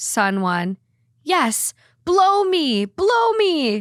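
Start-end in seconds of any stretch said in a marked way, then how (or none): 1.2-3.8 put-on very high, sing-song, swooping excited toddler voice. Retelling a story about their sons, a parent voices son one, imitating an excited toddler. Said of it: "Excited toddler jumping".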